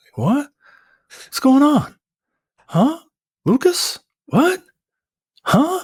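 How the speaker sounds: very high, swooping, bewildered, baffled string of huhs. Retelling a movie scene, doing a confused character's lines: Mark Wahlberg impression. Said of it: "He does his best Mark Wahlberg impression".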